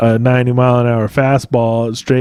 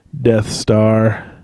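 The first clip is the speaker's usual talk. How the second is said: ordinary talk, nothing marked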